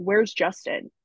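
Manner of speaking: acted-out, mock-panicked voice. Retelling being rushed by nurses in the hospital, acting out own panic.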